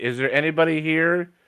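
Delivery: mild, high-pitched calling-out voice. Voicing a character calling out into a garage: shouting loudly. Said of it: "I'm just gonna shout loudly".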